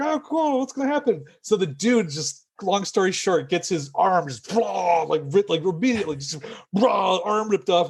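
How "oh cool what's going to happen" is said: put-on very high, eager, childlike little-kid voice. Recalling watching a horror movie as a kid, the speaker is acting out 7-year-old self. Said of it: "little 7-year-old me is like".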